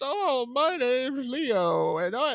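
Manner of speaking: high, drawn-out, goofy voice pushed way up. Describing the voice that Adam Sandler does as Leo, imitate it in a weird Adam Sandler voice. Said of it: "Adam Sandler doing like a weird Adam Sandler like "Oh, voice".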